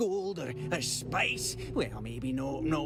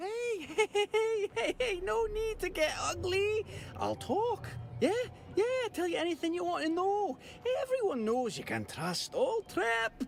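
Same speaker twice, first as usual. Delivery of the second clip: bad Scottish accent, pitched much higher. Voicing the game character Trip while being questioned, bad Scottish accent as Trip. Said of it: "That's a bad Scottish accent".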